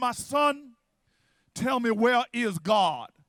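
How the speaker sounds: slow, deep baritone voice. Retelling a pastor, hand on his Bible, addressing a disrespectful boy, baritone pastor voice. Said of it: "just says in a baritone voice".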